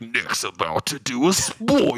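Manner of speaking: very slow, drawn-out, swooping divine voice. Imitating how Stank warns of a spoiler: Stank's God voice. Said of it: "Stank does his God voice".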